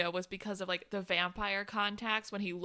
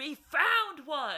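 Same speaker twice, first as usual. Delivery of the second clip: put-on high, excited screaming callout; 7 semitones higher, 4 dB louder than usual. Retelling characters in a film finding one in a lair: imitating someone screaming.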